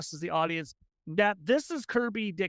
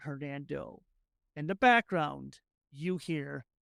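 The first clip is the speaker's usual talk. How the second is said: plain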